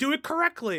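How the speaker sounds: high, loud shouted yelling. Picturing a torture situation where others demand it be done right: imitating someone yelling. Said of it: "yelling at me".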